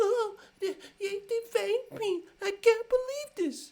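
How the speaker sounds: very high, loud crying whine. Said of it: "Like whining".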